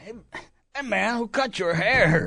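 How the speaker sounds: exaggerated stoner voice. Explaining that stoner voices mimic him, doing a Tommy Chong stoner voice. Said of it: "stereotypical stoner accent or voice".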